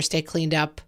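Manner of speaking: ordinary talk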